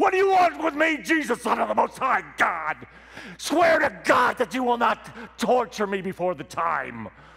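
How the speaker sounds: very high, terrified pleading shriek at full voice. Reading scripture aloud as the possessed man meeting Jesus: screaming at the top of his voice. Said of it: "screams at the top of his voice".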